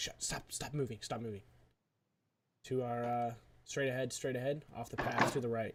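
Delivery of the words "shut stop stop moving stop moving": soft whisper under the breath. Telling the others in character to stop moving: whispering. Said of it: "I whisper to these guys".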